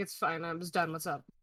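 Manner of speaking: grumbling. Called to the counter, [name] comes out grumbling under his breath. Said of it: "just like grumbling under his breath".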